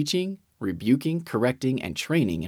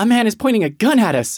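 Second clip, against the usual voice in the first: sudden, very high, very loud, shrill cry; 11 semitones higher, 9 dB louder than usual. Asked why she dived under the table, a wife explains, exclaiming. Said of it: "she exclaimed".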